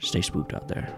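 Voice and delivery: dark, menacing, ominous whispered voice. Voicing a voice heard in a player's head: dark ominous voice. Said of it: "you hear a dark, ominous voice say".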